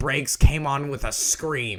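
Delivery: plain reading voice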